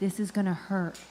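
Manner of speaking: quiet, secretive whispering. Retelling what the medical staff whispered before the procedure: imitating someone whispering. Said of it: "they whisper to me".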